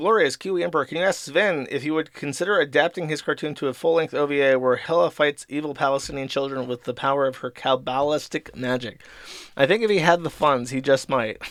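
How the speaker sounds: usual speaking voice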